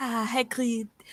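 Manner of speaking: put-on French accent, character voice. Imitating another speaker's opening line: french character voice. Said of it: "the line you use to get into the French character".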